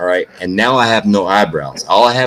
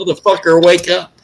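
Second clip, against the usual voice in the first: very high, shrill, pitched-up shout; 9 semitones higher than usual. Retelling yelling at oneself on a video: imitating a yell. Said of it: "I was yelling at myself on video".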